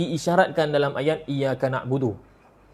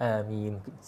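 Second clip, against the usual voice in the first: shy, soft, timid, half-hearted delivery; 5 semitones lower, 7 dB quieter than usual. Describing Malay worshippers saying amin shyly: imitating a timid, soft amin. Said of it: "amin dia malu-malu kucing. Amin, sikit saja".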